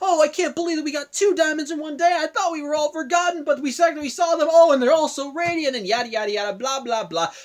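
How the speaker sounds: very high, loud, thrilled, fawning excited gush. Retelling a character's gushing after meeting diamonds: imitating excited happy gushing. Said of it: "she's being all excited and happy".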